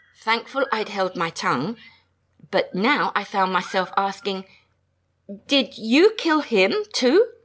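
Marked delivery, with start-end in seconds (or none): 5.5-7.3 trembling, shaky, shrill, raised voice. Narrator meaning to lighten the moment with a question; shaky, shrill voice. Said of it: "my voice came out shaky and shrill".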